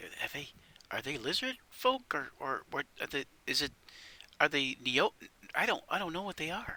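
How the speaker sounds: hushed, confidential, halting whispered aside. Voicing a character who leans over to ask the wait staff: whispering in character. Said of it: "'cause he's whispering".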